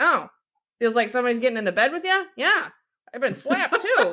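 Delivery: put-on offhand, unbothered, matter-of-fact old-man voice. Retelling a family story, doing grandpa's voice very nonchalantly. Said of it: "very nonchalantly is like".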